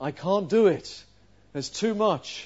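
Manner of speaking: put-on hopeless, despairing small-child voice, lamenting. Retelling a small child facing a messy bedroom, imitating Eloise's despairing voice. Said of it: "a despairing voice said".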